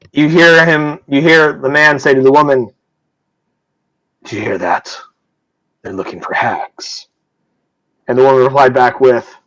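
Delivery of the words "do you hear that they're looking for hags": secretive, very low, hushed whisper, barely audible. Narrator voices a man in the corner whispering to a woman, very low hushed whisper. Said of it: "whisper to the other in a very, very low, hushed tone".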